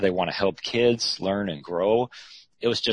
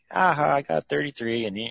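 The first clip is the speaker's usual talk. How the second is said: put-on teasing tone, much higher, slower; 6 semitones higher than usual. Recalling having more credits than a girlfriend: retelling teasing a girlfriend. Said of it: "I was teasing her like".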